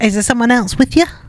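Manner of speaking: put-on weird, strange old lady voice. Retelling what the old cat lady says to the visitors: imitating the old lady's voice. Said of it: "In that voice?".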